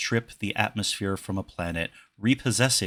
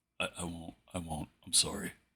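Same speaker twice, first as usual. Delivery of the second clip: barely audible, very quiet, soft, hushed voice; 3 semitones lower, 12 dB quieter than usual. Retelling a moment from a story about Sarah, very soft. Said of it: "very softly says".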